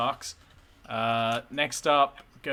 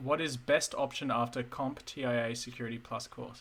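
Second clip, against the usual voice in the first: ordinary delivery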